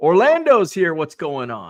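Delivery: ordinary delivery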